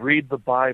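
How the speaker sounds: low, hushed half-whisper under the breath. Retelling a voice heard on a radio recording: imitating a low half-whisper. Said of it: "in a low whisper".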